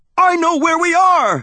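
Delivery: shrill, high, loud, excited and eager cry. Narrator recognizes the island from a guidebook and tells Thea: excited cry. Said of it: "I cried excitedly".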